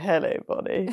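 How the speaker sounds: very creepy, unsettling, sinister tone. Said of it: "he said it in a very creepy way".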